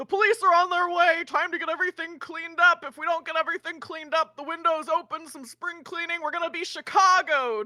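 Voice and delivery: loud high shout. A player's character shouts through a window at people waking up: shouting out a window. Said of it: "I'm gonna shout in the window".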